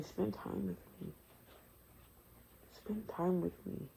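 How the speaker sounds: tender, gentle, breathy whisper. Preaching about spending time with him: gentle voice of the Most High. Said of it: "the gentle voice of the Most High".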